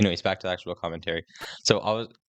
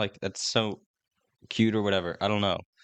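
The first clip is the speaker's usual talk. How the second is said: ordinary talk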